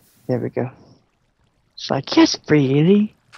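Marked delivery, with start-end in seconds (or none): 2.2-3.1 brief, quick British accent. Reacting to something in a game, briefly slipping into a British accent. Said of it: "I went British there for a second".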